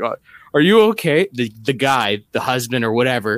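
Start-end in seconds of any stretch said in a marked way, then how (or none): 0.0-1.3 loud, worried, concerned voice. Retelling a fall, imitating a concerned woman asking: imitating a concerned woman. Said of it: "the lady asked me concerned".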